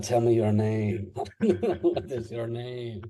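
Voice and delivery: coaxing tone in a put-on French accent. Recalling how the listener spoke to a dog; French accent. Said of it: "a French accent".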